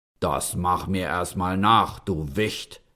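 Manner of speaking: deep giant voice, calling out loudly. Narrating a fairy tale, voicing the giant calling out to the tailor, deep giant voice. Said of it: "rief der Riese mit tiefer Stimme".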